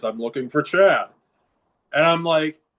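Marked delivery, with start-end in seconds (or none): 0.0-1.1 put-on booming voice, much lower. Retelling a phone call from California, the speaker imitates the caller's booming voice. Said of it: "you just hear that booming voice".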